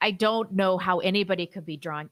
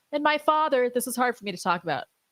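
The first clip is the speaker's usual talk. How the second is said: forced fake tearful crying, pitched up; 5 semitones higher than usual. Imitating Michaela trying to cry in her update video: fake crying. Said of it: "tries to cry".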